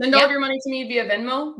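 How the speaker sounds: tongue-in-cheek sarcasm. Answering a viewer's question about sending lender money: sarcastic. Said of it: "she's being sarcastic".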